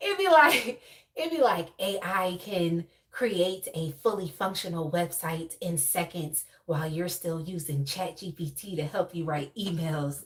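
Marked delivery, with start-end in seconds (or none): 1.8-10.2 put-on, quieter whispering ad-style voice. Describing an ad that came on earlier, the speaker mimics it: imitating a whispering ad voice. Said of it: "in this dumbass whispering voice".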